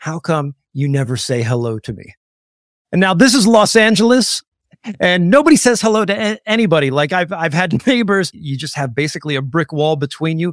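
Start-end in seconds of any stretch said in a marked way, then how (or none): 0.0-2.1 mock-tearful crying voice, slower. Retelling what a neighbor said, coming out of his garage, imitating someone crying. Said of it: "he's just in tears".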